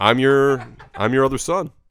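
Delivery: put-on loud, slow grandpa voice. Acting out a long-lost son showing up: imitating grandpa's voice. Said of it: "He's got his same voice".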